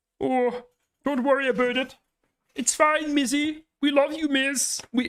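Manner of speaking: very high cartoon frog-puppet voice. Trying a Canadian accent while imitating a streamer: Kermit the Frog voice. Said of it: "I'm just doing Kermit the Frog now".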